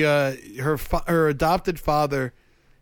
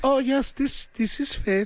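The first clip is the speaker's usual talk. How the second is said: bad put-on English accent, much higher; 10 semitones higher than usual. On the phone, pretending to be her English friend to reach her: bad English accent as Faith. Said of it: "That's a bad accent".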